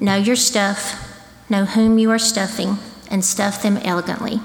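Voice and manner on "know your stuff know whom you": plain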